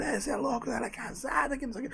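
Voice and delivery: put-on heavy carioca accent, very quiet and very high. Retelling a recorded phone call, voicing the man who answered in a heavy carioca accent. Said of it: "o cara cariocão, aquele sotaque bem puxado".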